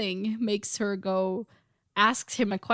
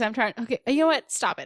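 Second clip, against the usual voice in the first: ordinary talk, nothing marked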